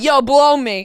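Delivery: loud, gross, crude, sleazy guy voice. Imagining how a gross guy talks: imitating a gross guy. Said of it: "like a gross guy being like".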